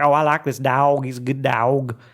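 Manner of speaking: huge, slow, thick Tennessee drawl. Speaker imitating a former roommate's brother from Tennessee, heavy Tennessee accent. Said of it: "his brother had a huge accent".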